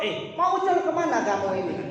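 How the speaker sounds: coarse, rude, harsh and rough tone. Retelling how a man questions his wife: mock-harsh rough question. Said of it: "Istrinya ditanya kasar".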